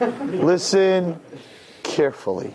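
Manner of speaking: listen stressed high with a laugh, then careful drop.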